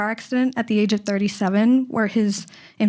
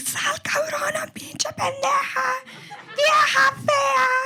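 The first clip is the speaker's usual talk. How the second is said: mock piercing, shrill, very high scream. Retelling how the grandmother stood outside yelling at the neighbors, imitating someone screaming insults. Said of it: "So she's out there screaming".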